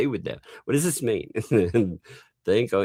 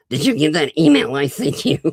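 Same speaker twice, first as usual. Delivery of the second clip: tiny, high, raised little voice; 8 semitones higher, 6 dB louder than usual. Retelling what a man at a convention said, imitating his little voice. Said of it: "He had a little voice like this".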